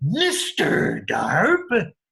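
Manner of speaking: funny-sounding, weird, silly made-up character voice. Showing learners how to say the name while pointing: weird Mister Darp voice. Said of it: "make a weird voice and weird face".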